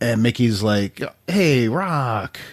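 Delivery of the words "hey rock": put-on whining voice, higher. Retelling a film scene to the other speakers, imitating Mickey whining. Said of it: "Mickey's kinda whining a little bit there".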